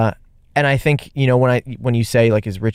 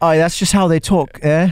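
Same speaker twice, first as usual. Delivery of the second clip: put-on British accent, pitched up; 5 semitones higher than usual. Joking about the show's British audience, in a put-on British accent. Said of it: "How's my accent?".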